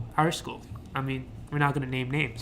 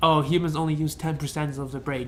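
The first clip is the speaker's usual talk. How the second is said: usual speaking voice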